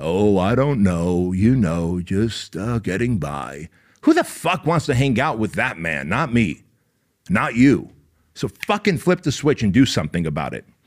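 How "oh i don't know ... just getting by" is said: mock very slow, sad, depressed, pathetic moping drawl. Imitating a depressed donkey answering a greeting: imitating Eeyore's depressed voice. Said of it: "that little depressed, sad, pathetic donkey".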